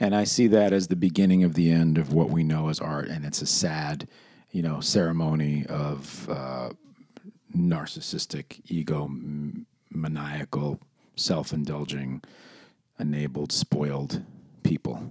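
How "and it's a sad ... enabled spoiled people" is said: low, hushed, slow, intense, sinking voice. Speaker in an intense argument, voice going low. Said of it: "I like how your voice went low in that super intense moment".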